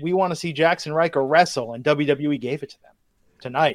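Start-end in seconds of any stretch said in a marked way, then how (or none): none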